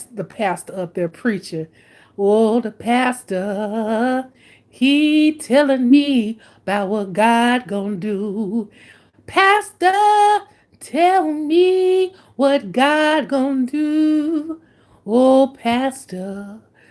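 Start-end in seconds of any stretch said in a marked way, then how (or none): 2.2-16.6 put-on very slow old lady voice, words stretched long. Describing an old church lady fanning herself during the sermon, Sister Mary church lady voice. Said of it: "bring the old church lady voice out".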